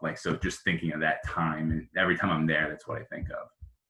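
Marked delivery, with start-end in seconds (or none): 2.7-3.5 soft, hushed, low whisper. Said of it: "I'm trying to talk low".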